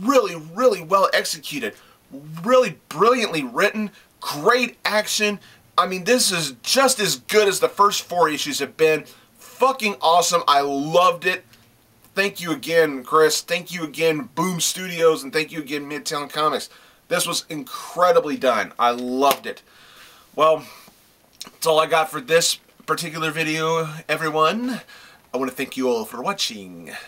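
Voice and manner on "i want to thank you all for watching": softer odd put-on voice. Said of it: "why am I talking like this?".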